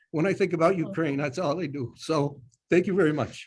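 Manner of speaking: rising, emotional voice. Closing a presentation with thanks and wishes for ukraine, getting emotional. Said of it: "I know I'm getting emotional".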